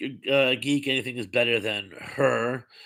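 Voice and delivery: ordinary talk, nothing marked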